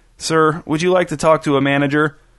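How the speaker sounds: ordinary delivery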